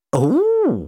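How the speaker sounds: very high-pitched, stretched-out, impressed 'oh'. Told that the shadow creature is in another man's thrall, the doctor sounds impressed. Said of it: "sounding impressed".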